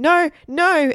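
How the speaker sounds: very high, loud, trembling voice. A waitress points her knife at a boy; he answers, shaking. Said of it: "Egbert said, shaking".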